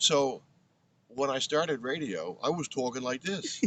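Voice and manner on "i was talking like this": put-on loud, pitched-up, thick old-school Brooklyn accent. Showing how they talked when starting radio: Brooklyn accent. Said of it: "But I lost my accent".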